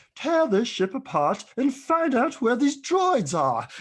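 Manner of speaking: shrill, very high-pitched delivery. Retelling how the Darth Vader actor sounded on set: high-pitched David Prowse voice. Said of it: "with a high-pitched voice?".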